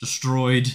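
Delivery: ordinary delivery, nothing marked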